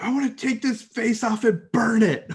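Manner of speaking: very high shouted line. Retelling a movie scene where the character yells his line: imitating a yell.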